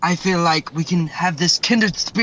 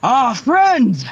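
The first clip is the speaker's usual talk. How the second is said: loud, high-pitched scream in a character voice; 7 semitones higher, 5 dB louder than usual. Voicing a character who spots the first mate: screaming in character. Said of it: "Chungus screams out".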